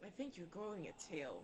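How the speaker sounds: close, hushed half-whisper. A player's character leans in close to another character: half-whispered. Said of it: "whispered it to her".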